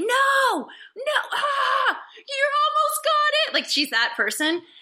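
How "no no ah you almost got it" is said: play-acted, very high, slow, drawn-out shriek. Imitating a daughter screaming at a movie: imitating someone screaming. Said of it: "screaming at it".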